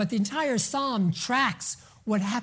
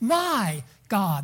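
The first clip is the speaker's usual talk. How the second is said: heavy stress on the word my. Explaining the phrase's original emphasis, with stress on the word my. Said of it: "the emphasis is on the first part. It's on my God".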